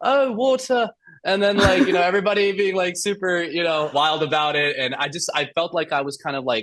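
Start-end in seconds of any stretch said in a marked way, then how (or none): 0.0-0.9 put-on very high-pitched British accent. Recalling when people asked them to say a word: British accent. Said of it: "I had a British accent at the time".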